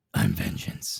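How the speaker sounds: brooding vigilante voice. Repeating the line on request, doing a Batman impersonation. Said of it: "Say it again, please".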